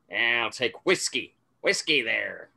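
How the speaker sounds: put-on 1940s mobster voice. Player voicing his character in a game, putting on a 1940s mobster voice. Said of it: "putting on a very 40s mobster sort of feel".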